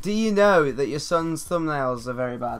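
ordinary delivery

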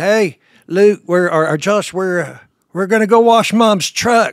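loud, high-pitched, teasing call.

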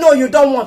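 ordinary delivery

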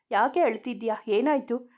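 ordinary delivery, nothing marked

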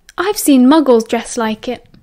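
ordinary delivery

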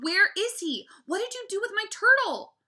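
shrill, very high, loud, full-volume shouting. Narrator confronting Fudge after he giggles and gives no answer, yelling. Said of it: "I yelled".

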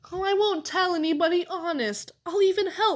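pleading. Caleb interrupts the narrator and pleads with him, pleading. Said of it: "he pleaded".

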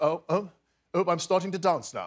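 extremely upper-class voice. Showing a work-in-progress impression of a line from the film: Hugh Grant impression. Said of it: "something very posh about the way he speaks".

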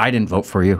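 mock gruff, rough-sounding voice. Retelling how the manager answered being thanked for employee of the month, imitating a gruff manager. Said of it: "he very gruffly goes".

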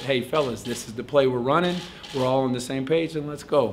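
ordinary delivery

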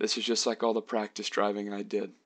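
ordinary delivery

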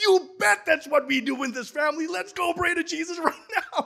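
excited voice, high and lifted in pitch. Retelling what they said to the boy while holding him: retelling raised excited voice. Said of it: "I raised my voice because I was so excited".

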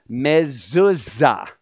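mezuzah said slow and drawn out. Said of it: "I will say it slowly".

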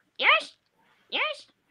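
cartoony high-pitched dinosaur voice. Speaker asks the others to guess the character, then does a Yoshi impression. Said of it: "that's me! Yoshi!".

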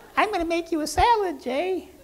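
very high, excited little weirdo voice. Pee-wee on stage, offering to make a salad; excited Pee-wee weirdo voice. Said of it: "Pee-wee's all excited in his little Pee-wee weirdo voice".

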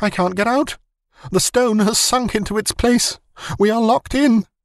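shrill, very high scream, wild with terror. Narrator reading a man's cry after he runs back down the passage, screaming wild with fear.

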